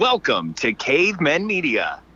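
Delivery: radio dj voice. Asked for a podcast intro, the speaker performs a stereotypical radio DJ voice. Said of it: "best stereotypical radio D J voice".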